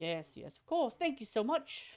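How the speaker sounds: horrible put-on Cockney accent, pitched high. Voicing a character answering Doctor Samuels; bad Cockney accent as Mrs. Williams. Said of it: "My horrible Cockney accent".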